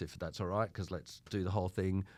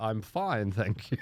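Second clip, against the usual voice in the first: loud, slow, drawn-out put-on proper British accent; 2 semitones higher, 5 dB louder than usual. Retelling walking into an audition late: put-on proper British accent. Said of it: "speak with a proper British accent".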